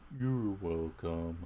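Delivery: deep, very slow slow-motion voice, a bit cute. Speaker says 'you're welcome' in that deep voice: deep Eeyore voice. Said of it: "it's like that deep voice. Kind of like Eeyore".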